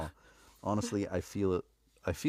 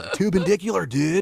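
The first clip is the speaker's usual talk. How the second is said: pitched-up, creaky skater surfer dude voice; 12 semitones higher, 7 dB louder than usual. Showing how the skater surfer word must be said: surfer dude delivery. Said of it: "you almost have to kinda say it like that".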